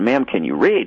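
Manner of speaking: normal talking voice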